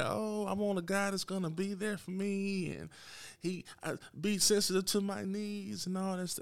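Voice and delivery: mocking, soft, sweet, put-on girly voice. Mimicking what women claim they want in a guy: put-on girl voice. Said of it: "That's my girl voice".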